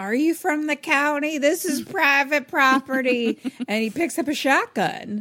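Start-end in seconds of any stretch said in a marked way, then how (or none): 0.0-3.4 high, loud yelling put-on old man voice. Retelling what an old man yelled when someone came to his door, imitating Howard yelling. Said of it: "Howard, old man, is just yelling like".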